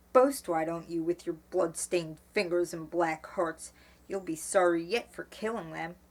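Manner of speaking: plain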